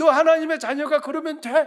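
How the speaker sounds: high, loud, mocking, jeering.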